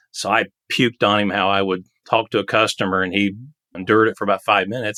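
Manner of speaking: normal talking voice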